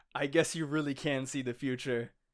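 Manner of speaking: ordinary talk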